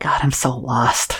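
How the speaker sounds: tiny, very small, shrunken little voice. Game master voicing a faint unseen voice the players hear, very small quiet voice. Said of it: "a very small voice, quietly".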